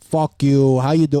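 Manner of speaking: put-on Brooklyn New York accent. Describing his Israel-born father's way of talking: put-on Brooklyn accent. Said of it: "but like a Brooklyn".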